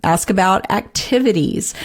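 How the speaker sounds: ordinary talk, nothing marked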